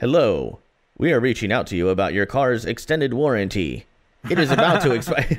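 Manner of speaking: machine-like, robotic male voice. Retelling a voicemail message they listened to, in a robotic male voice. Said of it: "kind of like this robotic male voice".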